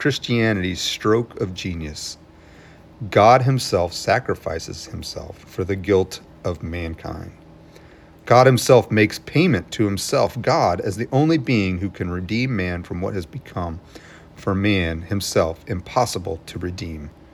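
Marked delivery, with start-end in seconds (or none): none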